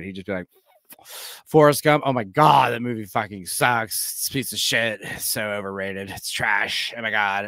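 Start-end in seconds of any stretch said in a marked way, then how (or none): 1.5-7.5 puffing on a cigarette, talking around it. Doing an impression of him smoking a cigarette, ranting about a movie. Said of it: "I'm just to do an impression of him smoking a cigarette".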